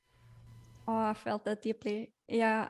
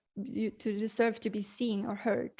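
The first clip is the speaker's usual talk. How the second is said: normal talking voice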